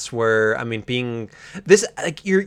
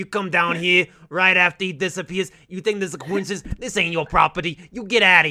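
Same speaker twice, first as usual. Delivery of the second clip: put-on New York accent throughout, pitched up; 6 semitones higher than usual. A character confronts another character: New York accent. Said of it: "It's New York, right?".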